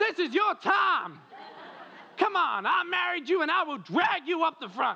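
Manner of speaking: put-on passionate, loud, very high-pitched American accent. Acting out a wife urging her husband up to the front, little american accent. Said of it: "when I get all passionate, I get a little American accent".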